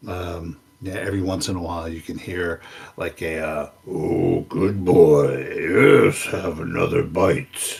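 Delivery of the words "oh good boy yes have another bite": deep, slow, sonorous voice muttering to itself. Narrator voicing a figure heard muttering to itself, deep sonorous muttering voice. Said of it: "a deep sonorous voice muttering to itself".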